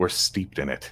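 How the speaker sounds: very soft, barely there, hushed whisper. Armored character cocking his head toward a companion, speaking very under his breath. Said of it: "very under his breath".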